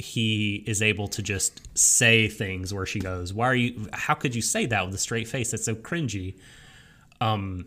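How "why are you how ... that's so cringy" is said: ordinary talk, nothing marked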